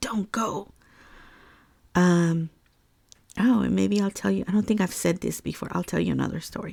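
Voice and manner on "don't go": rasping, weird-sounding male voice. Retelling a voice heard by the river: imitating a raspy male voice. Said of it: "a raspiness to the voice".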